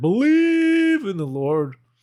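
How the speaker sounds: put-on very slow, high, drawn-out scream. Retelling a man who appears beside you: imitating a man screaming. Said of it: "he just screams".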